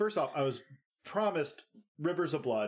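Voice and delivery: ordinary talk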